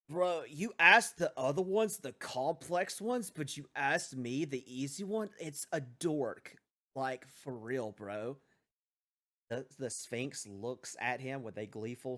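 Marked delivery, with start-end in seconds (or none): 0.2-8.4 easygoing, laid-back stoner bro voice. Voicing the stoner answering the Sphinx's riddle: voicing the stoner. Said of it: "He looks up to the Sphinx and goes".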